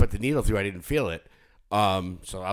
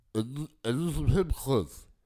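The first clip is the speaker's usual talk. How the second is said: high slur, as if past a swollen tongue; 6 semitones higher than usual. Retelling how customers with new tongue piercings asked: imitating swollen-tongue speech. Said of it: "they couldn't say it 'cause their tongue was swollen".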